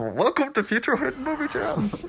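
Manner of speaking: silly, muffled, filtered masked villain voice, very high-pitched. Showing a co-host how the podcast should have started, Bane voice. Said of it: "started the podcast with your Bane voice".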